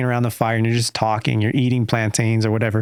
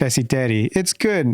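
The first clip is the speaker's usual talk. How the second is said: simple, halting broken English, Pennsylvania said as Pesiteri. Retelling how mom suddenly spoke English by the fire: imitating broken English. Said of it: "breaking out in broken English".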